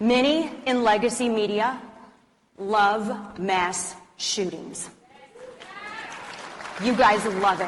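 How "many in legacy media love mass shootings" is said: really slow delivery. Addressing an audience before a point some will call controversial: said really slowly. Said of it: "I'll say it really slowly".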